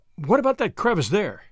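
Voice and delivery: ordinary talk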